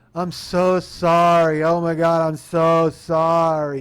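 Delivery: put-on very loud, very slow, drawn-out drunken slur. Recounting a woman apologizing, imitating her slurring words. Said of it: "She's slurring her words".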